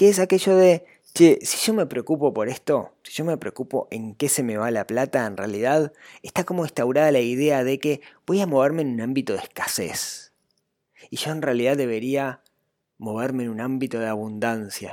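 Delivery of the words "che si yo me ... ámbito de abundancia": sarcastic, preachy, put-on self-help guru tone. Acting out a common money mindset idea, then comment: mocking guru-like tone. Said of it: "Y lo digo así, con ese tono".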